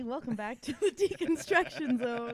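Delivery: giggling and laughing through the words. Welcoming everybody back to the episode, laughing while talking. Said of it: "Why are you laughing?".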